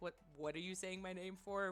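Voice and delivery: mock light teasing, joking and playful. Retelling asking two coworkers why they said one's name: imitating own joking question. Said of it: "Very jokingly".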